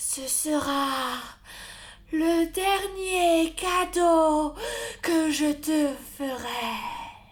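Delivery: solemn, tender, grave, sorrowful tone. Narrator reading a fairy tale, voicing Death to the godson: sorrowful Death speaking. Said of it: "Devant lui s'élevait la mort démesurée, / Devant lui s'élevait la mort démesurée, épouvantable, qui le regardait tristement sans mot dire. Étaient-ce des larmes qu'il voyait briller dans ses orbites v".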